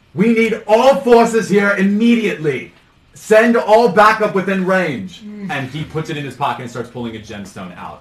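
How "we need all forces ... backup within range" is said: very loud, commanding, drawn-out shout. Game master voicing a man yelling into a scroll he carries, yelling orders. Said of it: "and he's yelling".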